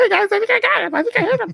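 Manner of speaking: put-on tiny, very high child voice. Retelling what a kid player said in a gritty zombie game, tiny kid voice. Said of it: "this little tiny voice pops up".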